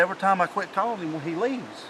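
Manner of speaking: ordinary talk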